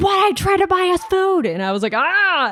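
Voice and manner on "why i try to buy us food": put-on, high, angry, frustrated yell. Retelling how Mert slammed his hand on the counter during an argument, imitating someone yelling. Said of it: "and Mert like yells".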